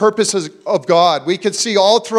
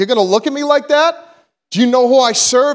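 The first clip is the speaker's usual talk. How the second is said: play-acted commanding, defiant, proclaiming tone; 4 semitones higher than usual. Retelling a dream, declaring to a giant woman: retelling a shout. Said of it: "this declaration at the top of my lungs".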